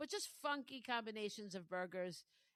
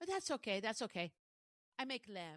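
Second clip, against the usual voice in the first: ordinary talk, nothing marked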